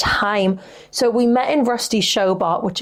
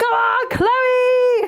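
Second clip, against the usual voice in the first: mock shrill, very high, excited shriek. Retelling cheering on a contestant from the front row, retelling a scream. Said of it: "I was literally screaming".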